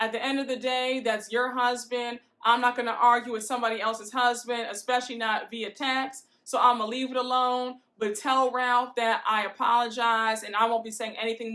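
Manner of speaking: usual speaking voice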